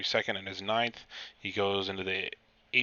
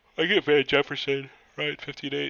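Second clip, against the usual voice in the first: loud, pitched-up speech through a yawn; 6 semitones higher, 6 dB louder than usual. Speaker talking through their draft picks, yawning. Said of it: "Excuse me while I'm yawning".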